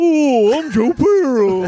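loud, high-pitched, very slow voice. Doing a quick impression after being asked: Joe Pera impression. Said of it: "I got one for you".

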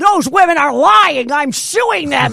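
high, loud, blustering dad voice.

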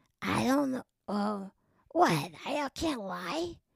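put-on raspy New York voice. Doing an impression while describing a changing voice: Natasha Lyonne voice. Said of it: "The voice is changing to".

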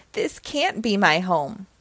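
ordinary delivery, nothing marked

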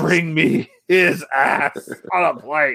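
restrained, held-back demon voice, drawn out. Recalling a game, the speaker acts out someone shouting: imitating a demon yelling. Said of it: "It's pretty much yelling".

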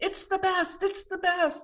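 put-on shrill, very high, insistent yell. The only American there retells an offended man's reaction, imitating a man shouting. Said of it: "He's shouting".

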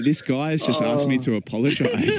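plain

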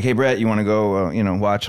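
plain

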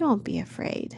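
gentle, calming, soothing voice. The shepherd replies to a frightened woman who dreads a forced marriage, gently. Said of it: "the shepherd said gently".

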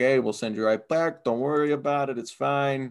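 put-on smooth, reassuring Brooklyn accent. Retelling how the Utrom try to reassure the Triceratons, in a Brooklyn accent. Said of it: "Yeah, exactly that accent".

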